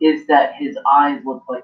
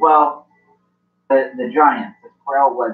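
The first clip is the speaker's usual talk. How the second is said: ordinary delivery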